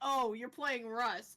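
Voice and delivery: mock contemptuous tone. Retelling own remark to husband playing a game: imitating a contemptuous tone. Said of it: "Don't say it with such contempt in your voice".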